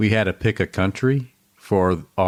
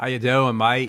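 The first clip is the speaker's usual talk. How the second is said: imitated Australian accent, higher pitch; 5 semitones higher than usual. Repeating a caller's greeting after being teased about the accent: put-on australian accent. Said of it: "that actually wasn't too bad".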